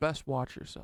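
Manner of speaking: put-on menacing whisper, hushed. Retelling how a man warned him to be careful: retelling a threatening warning. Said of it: "He said it in a fucking threatening way".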